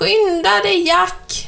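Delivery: cackling hen voice. Narrator reads the hen urging the fleeing rascal on as the giant chases, cackling hen. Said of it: "kacklade hönan".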